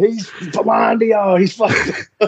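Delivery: high-pitched yell. Retelling heckling while someone speaks to kids: imitating own past yelling. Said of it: "And I'm over there yelling".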